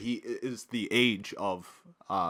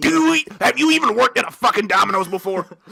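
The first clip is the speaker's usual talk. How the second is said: put-on, shrill, very loud, high furious yell; 10 semitones higher, 11 dB louder than usual. Imitating a phone trainer who was getting pissed off: imitating an angry trainer. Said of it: "getting pissed off".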